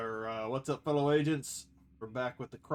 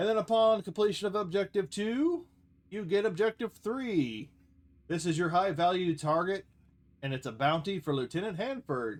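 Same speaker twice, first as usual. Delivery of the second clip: higher-pitched narrator-style announcer voice; 6 semitones higher than usual. Reading out game objectives and a bounty target: narration announcer voice. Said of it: "kind of the narration announcer voice".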